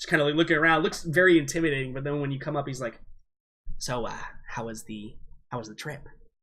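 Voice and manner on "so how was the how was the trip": very quiet, hushed, creepy, sleazy, skin-crawling voice. Describing Harvey leaning in an alleyway as you come up: creepy Harvey voice. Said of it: "I'm hearing the creepy pervert from G T A right now when you make that voice".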